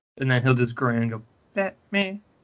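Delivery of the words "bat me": put-on sweet, cute, tiny high-pitched toddler voice. Retelling an old video of a toddler grinning and saying Batman: cute tiny voice imitating York. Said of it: "cute little tiny voice".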